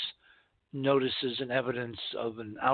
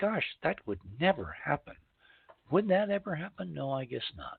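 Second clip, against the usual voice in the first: sarcastic, facetious, faux-innocent tongue-in-cheek musing; 4 semitones higher than usual. Host speaking to his show's audience, being facetious. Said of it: "I'm being very facetious".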